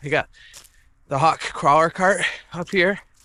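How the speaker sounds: out of breath. Talking to viewers while getting the cart up here, huffing and puffing. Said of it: "I'm huffing and puffing already".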